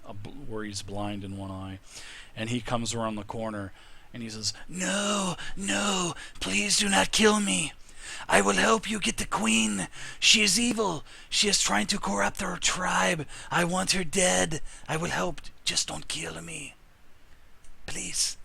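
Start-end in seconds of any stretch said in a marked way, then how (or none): 4.7-18.4 put-on lizard creature voice with a Mexican accent. Voicing an old lizard man begging the players to spare him: Mexican-accented lizard man. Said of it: "Sounds like a Mexican lizard".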